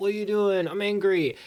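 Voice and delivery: normal talking voice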